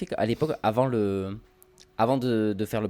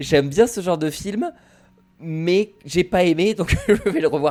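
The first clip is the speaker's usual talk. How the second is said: teasing mocking tone, pitched up and loud; 9 semitones higher, 7 dB louder than usual. Repeating the other speaker's words back to tease them: mocking imitation of a friend. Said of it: "tu comprends que je me foute de ta gueule".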